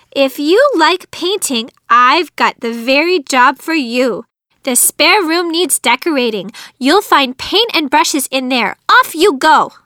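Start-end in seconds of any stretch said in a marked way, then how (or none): none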